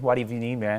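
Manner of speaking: put-on American accent. Answering a question about accents, showing a put-on American accent. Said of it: "I can do the American".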